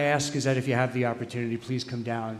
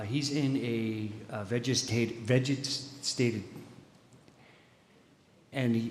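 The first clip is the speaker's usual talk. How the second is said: very slow, halting, choked-up words, catching with emotion; 4 dB quieter than usual. Announcing the softball tournament held for Izzy after his accident, choked up. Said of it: "I just get choked up when I talk about him".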